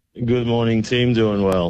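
low-energy, weary, flat, tired voice. A caller greeting the team on the line, flat. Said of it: "you sound a bit flat".

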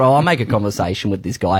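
ordinary delivery

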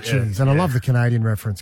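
ordinary talk

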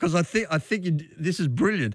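talking with words broken up by laughter. Reacting to another speaker's joke about a word: laughing while talking. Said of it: "Sorry, I'm laughing".

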